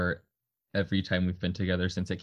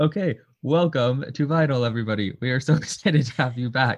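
high, loud talk through laughter; 6 semitones higher, 6 dB louder than usual. A host welcoming everybody back to Vinyl, laughing while talking. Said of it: "Sorry, I'm already laughing".

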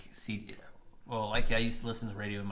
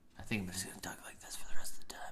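talking in a whisper throughout. On a podcast, hating the sound of their own voice, a speaker starts whispering. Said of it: "You can't whisper".

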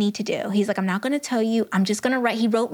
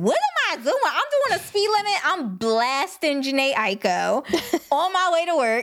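irritated, indignant rant with swooping pitch; 5 semitones higher than usual. Retelling being pulled over by a cop: imitating own annoyed self. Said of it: "I was pissed".

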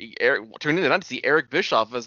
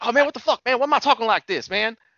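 higher-pitched southern rural voice; 10 semitones higher than usual. Retelling a story about Kazarian, doing Kazarian's hick accent. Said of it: "he would talk in some hick accent".

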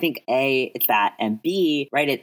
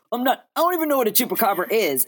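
put-on defensive tone, much higher; 11 semitones higher than usual. Retelling a story about a guy at the table, mock-defensive Quentin. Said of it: "Quentin's like all defensive".

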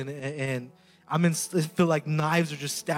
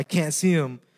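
put-on crying and sobbing. Retelling a vision, repeating own apology to Jesus: retelling own crying. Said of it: "and I'm crying".

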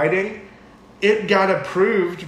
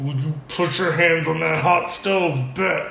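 put-on threatening voice. Speaker doing an impression of her mom, mock-threatening mom voice. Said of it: "almost like a mom's like threatening you".

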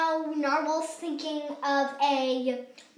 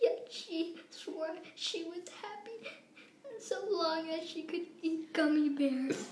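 very quiet, near-tearful, on the verge of tears; 2 semitones higher, 10 dB quieter than usual. Acting out a sad story for a listener, almost crying. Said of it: "you're almost crying".

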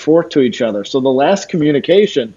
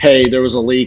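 ordinary talk, nothing marked

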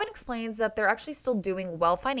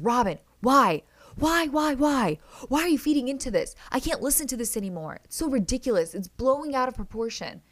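mock yelling, much higher; 3 semitones higher, 3 dB louder than usual. Speaker retells a man's outburst at a woman, imitating someone yelling. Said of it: "he just starts yelling at Robin".

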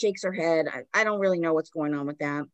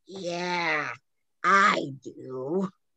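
rough, creepy, raspy voice. Retelling Janet's answer when asked if anyone is there, in Janet's scary raspy voice. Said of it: "in her fucking scary ass raspy voice".

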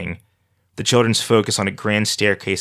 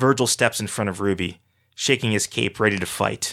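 plain reading voice

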